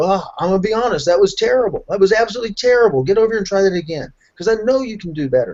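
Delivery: kindly blunt, laughing delivery. Retelling what is said to a student in class: retelling own words while laughing, put on. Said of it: "I start laughing".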